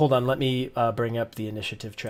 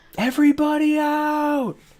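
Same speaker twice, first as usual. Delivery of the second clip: very high, shrill, drawn-out alarmed yell; 7 dB louder than usual. Voicing a character who just stabbed a player's character: yelling. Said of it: "and he yells".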